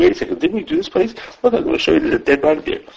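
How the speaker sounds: high, fast, mocking taunting tone.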